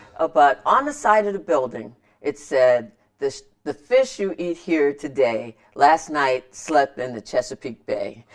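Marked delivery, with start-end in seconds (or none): none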